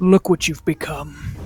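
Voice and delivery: cold, low, hushed taunting whisper, close and secretive.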